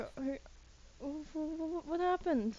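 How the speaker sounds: high, worried stammering.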